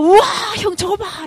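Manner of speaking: high, loud, excited, awestruck cry. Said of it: "라고 얘기하는 순간에".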